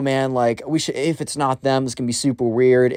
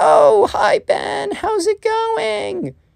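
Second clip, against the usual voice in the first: very high, creaky, swooping sing-song, drawn out. Retelling a story, acting out Emily greeting Ben: imitating Emily's voice. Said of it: "that's how she sounds, I guess".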